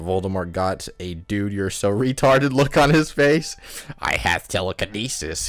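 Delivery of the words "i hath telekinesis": cruel, nasty delivery. Reading a story aloud, voicing the villain threatening the narrator, cruel tone. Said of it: "he said cruelly".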